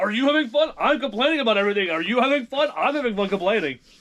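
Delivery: mock yelling. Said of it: "I'm yelling right now".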